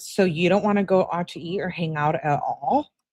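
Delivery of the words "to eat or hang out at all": ordinary talk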